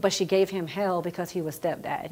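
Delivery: ordinary delivery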